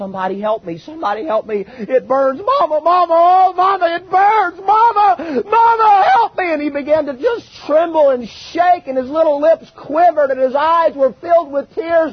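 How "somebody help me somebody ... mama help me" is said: put-on agonized high rising scream, "mama" drawn out. Retelling what a burned little boy screamed, retelling a scream of pain. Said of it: "he was screaming".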